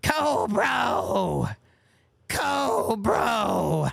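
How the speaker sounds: high, raspy, swooping cartoon villain voice. Speaker tries an old impression they say they can't do anymore: Cobra Commander voice. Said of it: "say Cobra as Cobra Commander".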